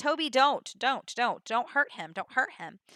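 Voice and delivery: ordinary talk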